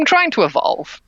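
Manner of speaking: high, begrudging, sighing delivery.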